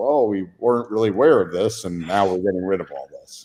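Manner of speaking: dry, a little sarcastic, knowing tone. Mocking a company's response after calling it out: sarcastic mock quote. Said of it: "I'm being a little sarcastic".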